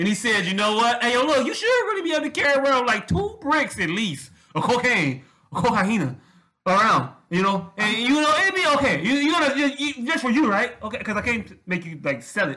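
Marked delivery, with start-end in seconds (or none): 1.0-12.6 put-on Mexican accent with drawn-out "you're". Quoting what a man told him, the speaker uses a Mexican accent. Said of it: "This is my Mexican accent".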